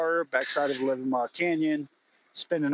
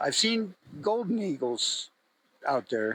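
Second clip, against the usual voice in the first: voice breaking partway through. Mid-conversation, the speaker's voice is cracking. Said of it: "my voice is cracking".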